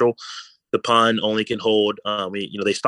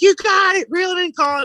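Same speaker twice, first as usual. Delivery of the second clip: put-on very high, shrill, frantic, excited kids' screaming; 5 dB louder than usual. Retelling how kids cheered a first trout catch: imitating kids screaming.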